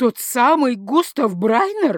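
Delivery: high voice cracking into a squeak. The frightened father questions the other man: voice breaking into a squeak. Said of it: "Голос его сорвался на писк".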